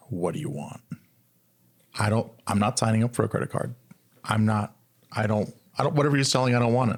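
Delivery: put-on, instant, guarded, defensive tone. Retelling a reply to a bank teller's greeting: imitating a defensive reply. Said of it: "Just immediately defensive".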